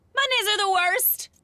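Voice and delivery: very high-pitched, shrill, piercing yell. Joining the others calling things the worst, yelling. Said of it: "I just wanted to yell something too".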